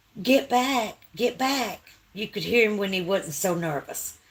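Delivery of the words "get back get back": put-on slow, drawn-out, mild holler. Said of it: "he kept hollering".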